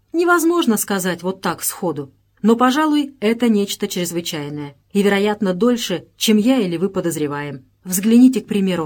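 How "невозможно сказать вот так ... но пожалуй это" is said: usual speaking voice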